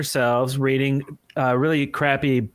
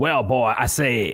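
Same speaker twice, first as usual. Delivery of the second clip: put-on cartoon rooster voice; 2 semitones lower than usual. Friends work out which cartoon chicken a voice sounds like; Foghorn Leghorn voice. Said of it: "the cartoon chicken".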